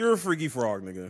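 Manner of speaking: plain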